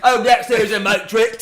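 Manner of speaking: put-on Cockney accent. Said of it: "said it in a Cockney accent".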